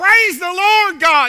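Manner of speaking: play-acted loud ringing shout. Telling a story of an elderly lady calling out from her porch, retelling her shout. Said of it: "She stood on the porch and she shouted".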